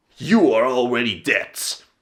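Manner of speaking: mock stoic delivery. Retelling a cartoon hero's catchphrase to a villain: stoic line delivery. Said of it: "Very stoically".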